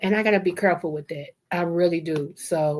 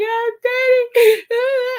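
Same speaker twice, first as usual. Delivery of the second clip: put-on high, loud tearful crying; 6 dB louder than usual. Retelling being held by her father at her wedding: reenacting own crying. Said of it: "I was crying".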